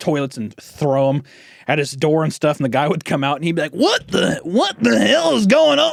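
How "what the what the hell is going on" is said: very high, rough, creaky, drawn-out, befuddled coach voice. Retelling how the coach reacted to pranks: imitating the old PE teacher. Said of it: "He'd sound like that".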